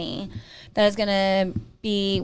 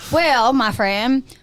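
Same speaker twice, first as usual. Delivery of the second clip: put-on country accent; 4 semitones higher, 7 dB louder than usual. Chiming in on the other speaker's joke, in a country accent. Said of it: "in a country accent".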